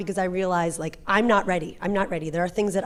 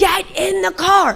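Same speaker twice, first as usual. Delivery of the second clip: very high, drawn-out, out-of-control screaming; 11 semitones higher, 8 dB louder than usual. Retelling waiting in the car for the children, imitating own past screaming. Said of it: "screaming in my car".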